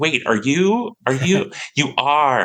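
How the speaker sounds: put-on American accent. Retelling fans who recognize the speaker's voice: american accent. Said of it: "going into an American accent for that".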